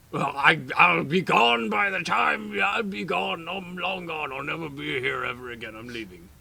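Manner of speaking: very loud, high, quaking, terrified ogre babbling. Voicing a huge ogre who is quaking in fear, as a frightened ogre. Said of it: "This ogre is bigger than all of you, but he's quaking in fear / This ogre is bigger than all of you, but he's quaking in fear How tall under is your. he? He's like 12 feet tall. / He'll just / but he'".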